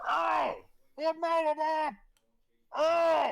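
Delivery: put-on very high, very loud, very slow, drunken slurring. Voicing a sailor calling from the coastline to the group: drunk-sounding voice. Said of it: "It's been drinking by the sound of it".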